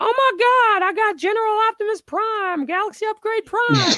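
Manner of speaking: put-on shrill, very high, loud little-kid voice. Retelling a card pull by the eight-year-old brother: imitating an eight-year-old kid. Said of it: "He said it just like that".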